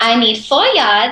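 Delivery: put-on Mexican accent. Speaker quoting their grandma about fabric, imitating grandma's mexican accent. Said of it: "Sorry, I make her accent".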